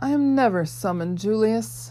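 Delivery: purring voice. A fiery man who shattered a father's boomerang answers Julius, purring. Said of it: "the man purred".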